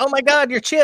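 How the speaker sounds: mock scream, very high, loud and sudden. Retelling a lady at airport security screaming at them: imitating a lady screaming. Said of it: "this lady just screams".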